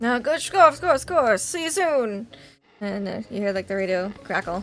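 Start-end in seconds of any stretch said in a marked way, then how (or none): 0.0-2.3 boat captain voice, higher and louder. Game master voicing the captain signing off over the radio, boat captain voice.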